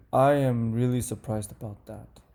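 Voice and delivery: disappointed falling intonation on surprised. Teaching intonation, reading example number two with falling intonation. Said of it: "the intonation goes up".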